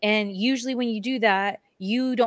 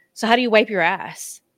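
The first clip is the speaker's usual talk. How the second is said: acted sarcastic tone, louder; 4 dB louder than usual. Retelling teasing a woman with a hurt, wrapped hand, retelling a sarcastic jab. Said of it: "And being sarcastic".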